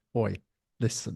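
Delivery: put-on TV soap-opera style accent. Speaker turns on a stranger chatting to his mate; EastEnders impression. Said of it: "doing my best EastEnders impression".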